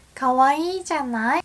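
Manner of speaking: high-pitched voice. Showing a Japanese phrase that sounds feminine: high-pitched voice. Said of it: "my voice is high-pitched right now".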